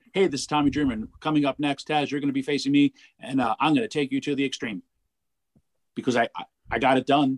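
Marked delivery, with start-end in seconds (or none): 0.1-4.8 hurried, rushed, rattled-off delivery. Imitating his own past wrestling promo: imitating his own fast promo. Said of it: "I would say my message fast".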